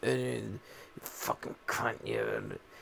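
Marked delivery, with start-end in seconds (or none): 1.0-2.6 whispered, breathy, strange creature voice. Retelling what an unstable guy said, speaking in a Gollum voice. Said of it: "he was straight goleming this shit".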